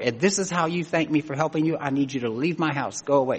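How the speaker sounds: plain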